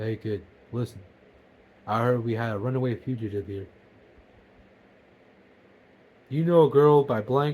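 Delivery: big man's deep, low voice. Retelling what a tall man said to you as a kid, in a deep voice. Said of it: "in a deep voice he goes".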